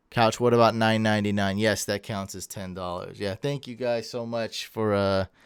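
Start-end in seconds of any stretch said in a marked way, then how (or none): none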